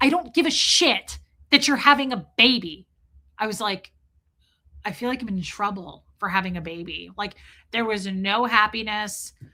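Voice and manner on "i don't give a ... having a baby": play-acted, furious, angry shouting outburst. Retelling what the speaker's dad shouted about the coming baby, retelling dad's shouting. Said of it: "he was like shouting at me".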